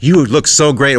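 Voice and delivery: effusive, fawning voice.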